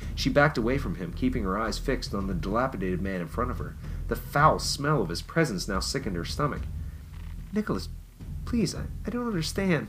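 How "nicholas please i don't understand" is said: very high, terrified, barely managed frightened pleading. She pleads with Nicholas, terrified, barely managing to speak. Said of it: "she finally managed".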